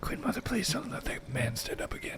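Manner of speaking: hushed whisper under the breath. In a role-playing game, a character lying down to rest, whispering to himself. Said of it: "He whispers to himself".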